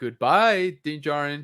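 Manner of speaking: mock snide, teasing, sarcastic tone. Retelling how she said goodbye to Din Djarin, mock-sarcastic goodbye. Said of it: "Like kind of sarcastically".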